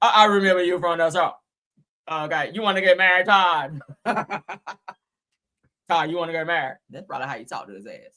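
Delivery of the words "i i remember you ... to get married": put-on deep, loud, drawn-out man's voice. Act out how a man probably talked to Todd, in a put-on deep voice. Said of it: "like that deep voice sounding".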